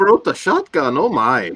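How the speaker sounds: very high, bad, stock leprechaun-style Irish accent. Reading a viewer's comment aloud as asked, in an attempted Irish accent. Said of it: "read Sean McManus's comment in appropriate accent".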